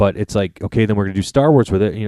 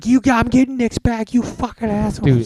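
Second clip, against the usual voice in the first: put-on very high, shrill yell; 14 semitones higher than usual. Retelling yelling at the tv when nix gets taken: imitating own yelling. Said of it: "yelling at my T V".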